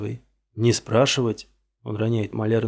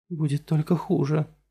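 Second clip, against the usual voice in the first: hushed, whispered voice; 5 semitones higher than usual. After breaking free from a man's grip, a woman speaks to him, whispering. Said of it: "шепчет она".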